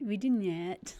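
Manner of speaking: put-on drawl. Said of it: "you kind of had a little drawl there".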